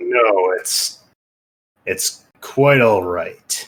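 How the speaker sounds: strained voice through clenched, gritted teeth. A character mistaken for his dwarf companion answers the apology, through gritted teeth. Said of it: "He says through through gritted teeth".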